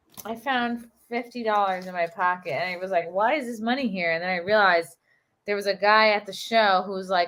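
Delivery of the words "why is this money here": plain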